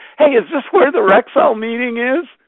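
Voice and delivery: loud hollering call from the back of a room. Retelling a man at the back of an empty conference room calling out: imitating a loud call. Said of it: "he said out loud with a loud voice".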